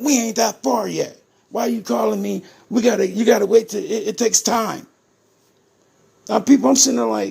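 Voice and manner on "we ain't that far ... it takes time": acted-out yell, kept moderate and mild. Retelling a phone call where the attorney yelled back: imitating a lawyer yelling. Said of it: "he yells at me".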